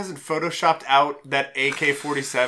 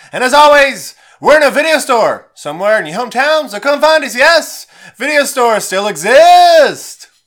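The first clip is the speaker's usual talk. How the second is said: high, booming radio announcer voice. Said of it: "Did you like my radio announcer voice".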